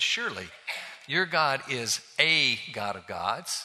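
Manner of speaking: heavy emphasis driven onto the word a. Reading a bible verse aloud to make a point, with stress on the word a. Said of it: "I'm emphasizing the word "a" to make my point".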